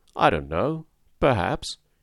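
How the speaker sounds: somewhat embarrassed tone. Fix responds to the other man's bantering question, a little embarrassed. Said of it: "a little embarrassed".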